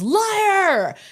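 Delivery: put-on shrill, very high, drawn-out yell. Retelling how Jeff answered on a video call: imitating someone yelling. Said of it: "he just yells".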